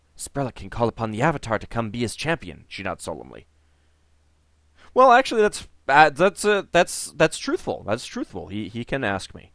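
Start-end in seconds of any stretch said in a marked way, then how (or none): 0.2-2.7 quiet whisper. Reading a game character's line aloud as she confides a secret: whispering. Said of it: "She whispers to you".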